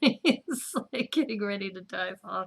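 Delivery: talking through laughter. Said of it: "I'm sorry I'm laughing so hard".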